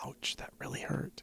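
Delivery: very hushed, barely-there in-character whisper. Playing a character who points at a companion: in-character whisper. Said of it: "I just whisper".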